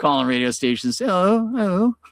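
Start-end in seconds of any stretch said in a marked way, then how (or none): 1.0-1.9 put-on British-accented voice, pitched up. Retelling how the fake manager Sean called radio stations: Sean's British accent. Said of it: "because he had a British accent".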